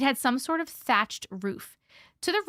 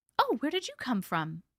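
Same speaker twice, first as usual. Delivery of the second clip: gently anxious, concerned, worried tone; 2 semitones higher than usual. An old woman at the door asks the narrator something, in a concerned voice. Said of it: "she asked in a concerned voice".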